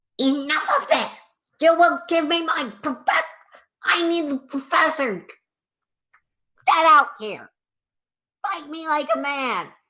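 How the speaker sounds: shrill, very high shrieking voice. The game narrator voices the same psychic voice to the players, shrieking. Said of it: "the same psychic voice shrieks out".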